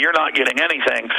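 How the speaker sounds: ordinary delivery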